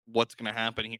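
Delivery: ordinary talk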